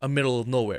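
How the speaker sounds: ordinary delivery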